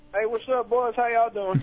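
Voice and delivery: Southern twang. Greeting the others, who then point out the accent: southern twang. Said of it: "there's the twang".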